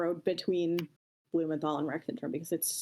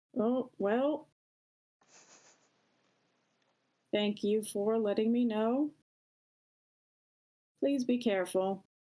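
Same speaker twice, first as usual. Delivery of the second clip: groggy, drowsy, half-asleep voice, pitched up; 5 semitones higher than usual. Voicing Torkel answering a spell message after a pause, groggy Torkel voice. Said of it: "a very groggy sounding Torkel say".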